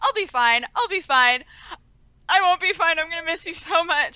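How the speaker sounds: mock crying, high and sobbing. Retelling a character's goodbye scene: imitating a sobbing goodbye. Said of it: "And just, like, sobbing".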